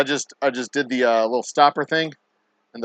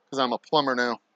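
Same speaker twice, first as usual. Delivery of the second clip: ordinary talk, nothing marked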